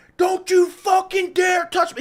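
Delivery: mock shrill, high, loud, furious scream, dragged out. Retelling the car owner's outburst at them, retelling an angry scream. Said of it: "he's screaming".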